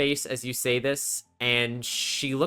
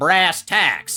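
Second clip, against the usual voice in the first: put-on scowling voice, higher and louder; 3 semitones higher, 8 dB louder than usual. Voicing an innkeeper imitating Hilda with a scowl: Marnie's scowling Hilda impression. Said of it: "doing her best Hilda impression of scowling".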